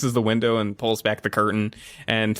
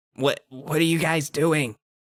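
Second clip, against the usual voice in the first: forceful stage whisper; 6 semitones higher than usual. Voicing a character at a window talking to visitors: whisper-yelling. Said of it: "he whisper yells at you".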